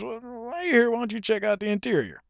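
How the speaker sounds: high, pushy car salesman voice. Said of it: "Salesman says".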